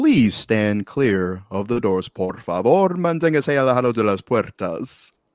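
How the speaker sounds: loud, bilingual PA announcer voice. Telling a co-host about the Spanish voice in his head, Disney monorail announcement voice. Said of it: "that's kind of like my internal Spanish voice".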